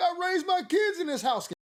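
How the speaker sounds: mock very high-pitched, tearful crying voice. Retelling the lady crying while walls are knocked down: imitating a woman crying. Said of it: "She in there crying like".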